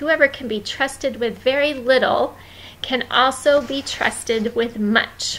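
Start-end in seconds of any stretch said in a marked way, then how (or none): none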